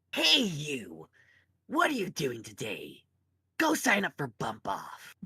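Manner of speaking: sing-song put-on character voice. Recreating the first role he applied for, in the Max voice. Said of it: "I'll do the Max voice".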